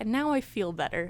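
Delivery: ordinary delivery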